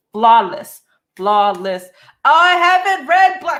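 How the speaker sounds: very loud, high raving yell. Raving about a book series into a mic, the speaker is yelling. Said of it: "I'm sorry, I'm yelling".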